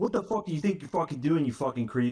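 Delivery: put-on aggressive, furious rage. Speaker retells confronting a man who grabbed their girlfriend, retelling a furious outburst. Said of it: "I- am ready to fucking kill this guy".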